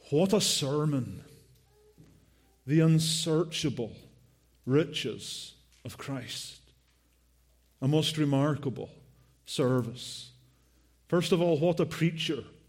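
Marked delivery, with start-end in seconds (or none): none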